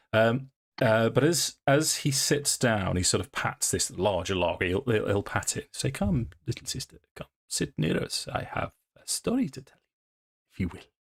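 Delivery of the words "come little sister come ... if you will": soft, clumsy put-on Eastern European accent. Voicing a character who pats a log and invites little sister near, bad Eastern European accent. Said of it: "in various uh, Eastern European accents".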